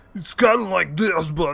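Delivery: loose Brooklyn accent. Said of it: "Like a Brooklyn kinda".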